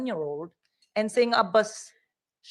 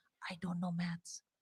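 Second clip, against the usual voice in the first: barely audible, very hushed whisper; 4 semitones lower, 15 dB quieter than usual. Recalling a job interview, confiding to a sympathetic interviewer: retelling a whisper. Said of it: "I literally started whispering".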